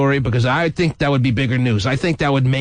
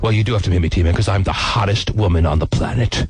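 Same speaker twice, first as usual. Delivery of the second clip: low, all-serious, dead-serious woman's voice; 5 semitones lower than usual. Telling a true story about a woman caller, the speaker is retelling a serious tone. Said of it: "all serious and in that tone of voice".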